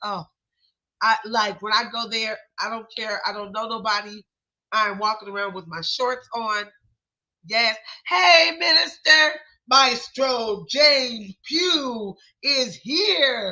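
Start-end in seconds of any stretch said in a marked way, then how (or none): 8.1-13.5 high, very slow, very drawn-out announcer voice. Speaker announcing his own arrival, announcer voice. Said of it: "I sound like an announcer".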